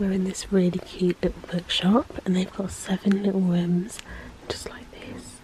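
quiet whispering. Speaking inside a quiet little bookshop: whispering. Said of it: "But I'm whispering because it's very quiet in here".

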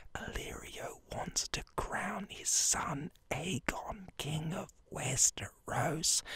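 slow, hushed, raspy whisper, barely voiced. Speaker explaining a character's plan to his audience, whispering. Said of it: "I'm whispering now".

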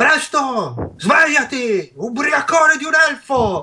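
shrill, very high, impatient scolding shout. Game narration: the priest pounds on a sleeping player's door at seven, shouting.

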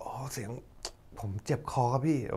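put-on crying voice, very quiet. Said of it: "พูดแบบน้ำตาไหลน้ำตาคลอ".

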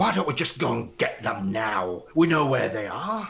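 hot-headed, angry voice. Voicing a pickpocketed tavern drinker who wants to go after them: angry voice. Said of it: "says the angry one".

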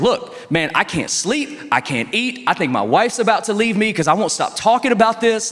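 acted livid rant. Retelling a man finding sawdust in a box, the speaker imitates him livid. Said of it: "And the guy is livid".

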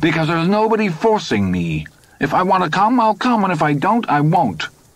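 thin, quavering, wavering hysterical edge, very high. Todd answers his companion's questions in a thin, wavering, hysterical voice. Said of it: "His voice had risen and taken on a thin, wavering, hysterical note".

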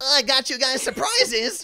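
very high, shrill, loud, cracked-out leprechaun mascot voice. Retelling a friend handing out surprises, imitating Carla Marie as cracked-out cereal mascot. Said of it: "like a cracked out Lucky Charms character".

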